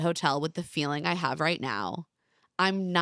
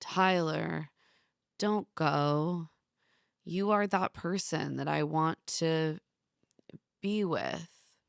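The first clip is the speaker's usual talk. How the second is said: flat, lifeless, unconvincing deadpan monotone; 3 dB quieter than usual. Recapping Kevin's response to Tyler, imitating Kevin's monotone. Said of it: "In monotone".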